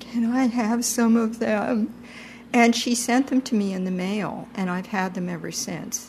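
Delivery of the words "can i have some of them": small, shaky, wavering little voice. Retelling meeting a young woman who kept kefir grains, the speaker quotes themself in a shaky little voice. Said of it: "in the shaky little non-teacher voice".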